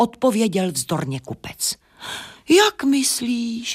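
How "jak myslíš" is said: words let out on a sigh. The owls answer the merchant, sighing. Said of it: "vzdychli sovy".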